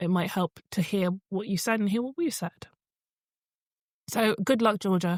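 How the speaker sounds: voice catching, choked up with emotion. Host wishing a listener luck at the end of advice, choked up. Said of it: "I'm not getting choked up".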